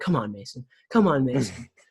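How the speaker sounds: put-on TV football announcer voice. Retelling a goal from a match, imitating the TV announcer. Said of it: "he was like".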